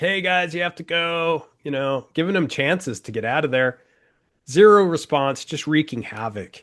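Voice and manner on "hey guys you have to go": gentle called-out voice. Retelling how two men warned trespassers down the road: imitating someone yelling. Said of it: "they're yelling at 'em".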